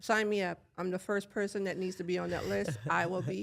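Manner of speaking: ordinary delivery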